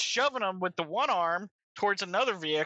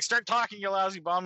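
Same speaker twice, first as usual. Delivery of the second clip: ordinary delivery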